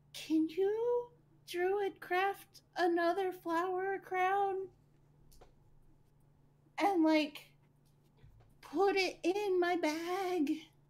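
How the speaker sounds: whispering in a character voice. As a character, asking another character for a favor: whispering in character. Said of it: "she's gonna whisper in Annis's ear".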